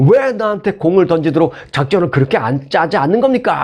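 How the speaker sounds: mild put-on angry yelling.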